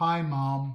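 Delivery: soft, small whispering voice. During a lecture-theatre power outage, a small voice answers a ringing phone: small whispering voice. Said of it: "we heard a small voice whisper".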